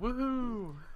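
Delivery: high, mock-cheery sarcastic "woohoo".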